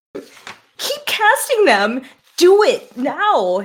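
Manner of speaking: high, drawn-out commanding shout. A tabletop game character calls to an ally, shouting. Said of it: "And she shouts".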